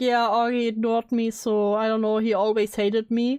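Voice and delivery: ordinary talk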